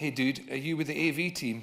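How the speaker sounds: usual speaking voice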